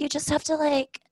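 light, easygoing, very zen voice, pitch lifted. Imitating own past way of talking: imitating own lighter zen voice. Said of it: "a lighter voice and just be very zen".

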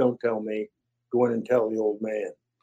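put-on stern, low, flat deadpan delivery. Retelling what a man once told him, retelling a deadpan remark. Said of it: "He got real deadpan".

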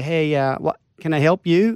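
put-on American accent. Retelling an encounter, quoting a greeting, in a fake american accent. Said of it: "faking an American accent".

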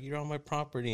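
put-on high screaming at full volume. Retelling a woman yelling at people from her driveway, mock yelling her eyes out. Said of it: "she was just yelling her eyes out".

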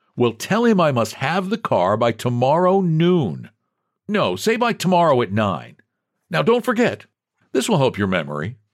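cheery, good-humoured, sing-song. In a story, a man gives the garage's old night washer instructions, cheerful. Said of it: "he said cheerfully. / one of which Jasper could open as teller".

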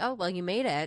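ordinary talk, nothing marked

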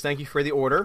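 ordinary delivery

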